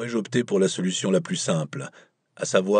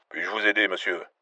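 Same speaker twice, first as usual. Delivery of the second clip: put-on gruff, rough American accent. Narrator reading a novel, a new voice answers the phone: gruff american accent. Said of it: "une autre voix, bourrue et avec un accent américain".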